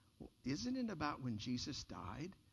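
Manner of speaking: put-on quiet little girl voice. Retelling how a little girl answered the teacher's question, imitating a girl's very quiet voice. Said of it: "with a real silent voice said".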